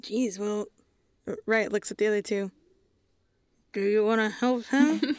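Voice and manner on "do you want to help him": spoken sidelong out of the side of the mouth. A character looks at her two companions and asks them, murmuring out of the side of her mouth. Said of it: "She kind of murmurs out of the side of her mouth".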